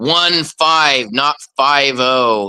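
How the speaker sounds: put-on, abruptly angry tone. Retelling how a man suddenly snapped after being misunderstood, imitating an angry tone. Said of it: "got like a really like angry tone of voice".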